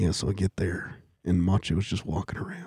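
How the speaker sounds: very hushed near-whisper, barely above breath. Retelling a wrestler's story about a snake: whispery Jake Roberts voice. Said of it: "he's got that whispery th-".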